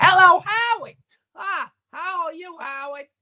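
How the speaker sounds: put-on high-pitched and loud elderly voice.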